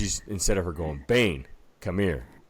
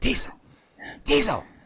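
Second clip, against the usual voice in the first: loud, very high-pitched whisper-yell. Retelling how she called the dog to the back door: imitating a whisper-yell. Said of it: "whisper yelling to get him".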